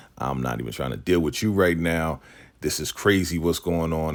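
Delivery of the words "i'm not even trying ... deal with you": usual speaking voice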